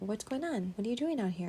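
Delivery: ordinary talk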